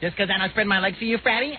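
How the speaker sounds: high-pitched, fast, rattled-off delivery. Mimicking the other speaker's line back at him: mocking Howard impression. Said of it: "what is that new impression?".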